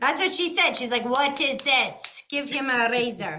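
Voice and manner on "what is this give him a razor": slow put-on French accent coming through. Quoting what she said to the other speaker, imitating a french accent. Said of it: "You get the French accent coming out".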